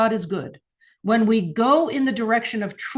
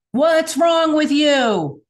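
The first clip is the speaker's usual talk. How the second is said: blaming, accusatory tone with pitched-up voice; 7 semitones higher, 3 dB louder than usual. Speaker demonstrates asking a question two ways, in an accusatory tone. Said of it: "in that kind of accusatory tone".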